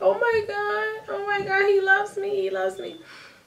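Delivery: play-acted very high, tearful sobbing voice. Retelling the moment a boyfriend offered support: retelling crying. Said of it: "I just started crying".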